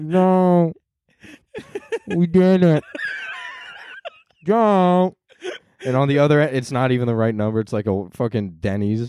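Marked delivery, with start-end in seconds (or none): 0.0-5.1 drowsy, groggy, very slow half-asleep voice. Retelling a woman waking from a nap on her campaign bus, imitating a just-woken drowsy voice. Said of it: "just woke up from a nap".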